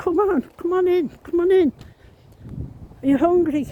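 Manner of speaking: fake Irish accent, very high. Quoting what their grandmother used to say, in a put-on Irish accent. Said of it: "I'm putting an Irish voice on there".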